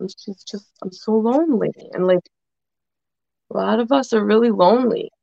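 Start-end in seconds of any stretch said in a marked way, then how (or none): 0.8-1.7 play-acted speech broken up by crying, tearful. Retelling what a crying woman said: imitating someone crying. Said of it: "She was, like, crying".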